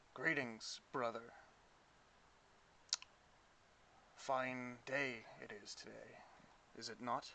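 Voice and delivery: composed, calm, steady, even tone. Voicing a character who looks up and greets a figure, in a calm voice. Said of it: "in a calm voice".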